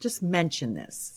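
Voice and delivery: ordinary delivery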